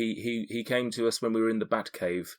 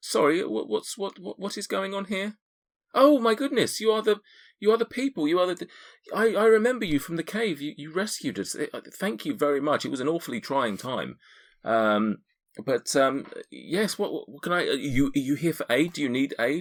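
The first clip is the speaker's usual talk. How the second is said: put-on older woman voice, much higher; 7 semitones higher than usual. Game narrator voices an older tiefling woman greeting the party at her door, in an older woman's voice. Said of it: "an older woman this time. She says".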